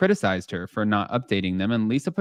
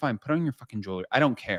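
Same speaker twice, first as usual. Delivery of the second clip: put-on annoyed voice, quieter; 5 dB quieter than usual. Retelling a reunion moment, imitating Andy Cohen, annoyed. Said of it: "He was so annoyed".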